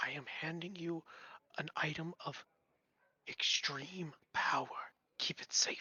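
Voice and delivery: very slow, drawn-out, close, hushed whisper. Voicing a man who pulls you closer during a handshake, whispering. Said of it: "and he whispers to you".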